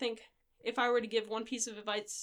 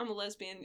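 dry, flat, straight deadpan delivery; 3 dB quieter than usual. Retelling a straight-faced answer to someone's question: imitating own deadpan reply. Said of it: "straight faced".

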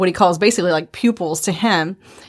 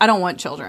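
usual speaking voice

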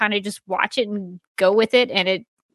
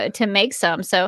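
ordinary talk, nothing marked

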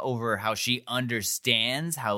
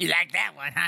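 high-pitched, dopey, cartoonish voice; 6 semitones higher than usual. Retelling what the fish man said on the other side, in a Beavis and Butthead-style voice. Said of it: "the dude sounds like a cartoon character, like Beavis and Butthead".

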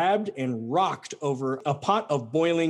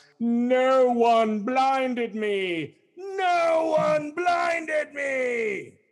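put-on very high drunken howl, me stretched long; 10 semitones higher than usual. Retelling Odysseus's story, the blinded cyclops calls to the other monsters, drunk cyclops howling. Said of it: "the drunk cyclops howls".

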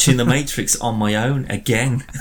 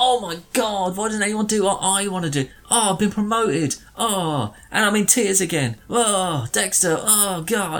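mock whiny voice, much higher pitch; 8 semitones higher than usual. Complaining about a character from Dexter she dislikes, whiny Debra impression. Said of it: "This whiny, narcissistic, self-indulgent little dick".

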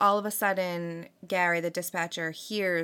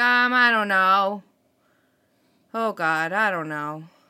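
acted indifferent, unbothered, slow, raised apathetic voice; 7 dB louder than usual. Retelling a 911 caller unsure of his location: imitating an apathetic caller. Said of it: "Very apathetic".

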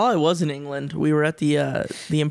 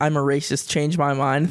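usual speaking voice

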